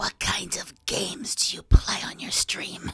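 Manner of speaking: sinister, breathy, evil villain stage whisper. Trying to do an evil voice for a question: sinister put-on evil voice. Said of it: "we do an evil voice, ... very, very like sinister".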